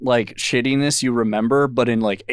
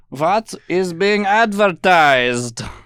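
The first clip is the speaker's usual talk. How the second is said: deliberately terrible put-on German accent, high and slow; 6 semitones higher, 4 dB louder than usual. Asking what the german ad channel advertises, in a bad german accent. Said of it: "It's my best German. So it's my worst".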